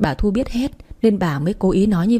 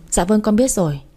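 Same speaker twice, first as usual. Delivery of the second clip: ordinary delivery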